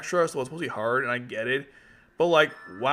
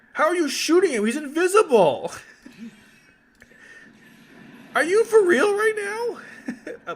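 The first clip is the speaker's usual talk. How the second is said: very high, raised voice, cracking and breaking; 5 dB louder than usual. A player reacting to a lost match, voice cracking. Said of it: "My voice is cracking".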